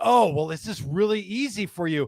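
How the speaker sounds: mock-excited young voice, really excited. Retelling a story, the speaker voices a young bartender, imitating an excited bartender. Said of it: "he gets like really excited".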